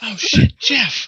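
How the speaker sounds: hushed mutter. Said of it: "under my breath".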